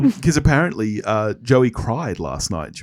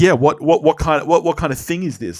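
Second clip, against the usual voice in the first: high-pitched, stammering, rambling run of words; 5 semitones higher, 3 dB louder than usual. Retelling a character's line: imitating Phoebe's rambling run. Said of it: "this Phoebe run where she's like".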